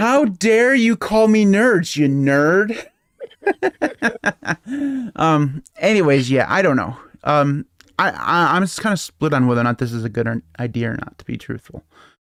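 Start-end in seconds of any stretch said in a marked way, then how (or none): 0.0-2.9 sarcastic mock outrage, high-pitched and slow. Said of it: "Somebody who can't read sarcasm".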